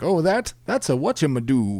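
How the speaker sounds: goofy cartoon bird voice, swooping up and down. Speaker describes how Harkin World Claimer sounds in their head: Little Mermaid seagull voice. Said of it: "sounds more like uh, the seagull".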